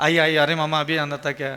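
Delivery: normal talking voice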